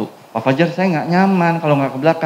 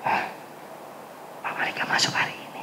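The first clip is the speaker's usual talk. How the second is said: quick, breathy, very quiet whisper. Speaker demonstrates the same sentence in a new tone: whispering. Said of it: "ganti kata tersebut nadanya dengan bisik-bisik".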